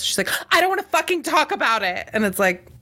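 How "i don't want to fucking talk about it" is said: put-on very high, sulky, petulant child outburst. Retelling her reaction when asked about not dancing anymore, mimicking a petulant child tone. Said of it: "She turns into like a full petulant child".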